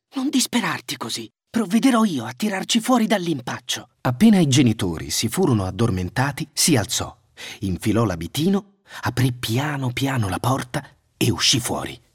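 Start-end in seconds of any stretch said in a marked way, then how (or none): 0.2-3.9 whispered, much higher pitch. A boy hushing his weeping sister, whispered. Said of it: "sussurrò Hansel".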